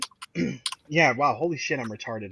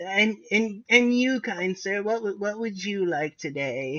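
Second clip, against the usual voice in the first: put-on high-pitched little old lady voice; 5 semitones higher, 4 dB quieter than usual. Playing the grandma running the gift shop, asking a customer, in a little old grandma voice. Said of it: "little grandma running the gift shop".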